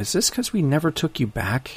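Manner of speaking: soft, small, high little voice. Retelling the mother's question on a call after an awkward pause, small, soft voice. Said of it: "in a small, soft little tone of voice".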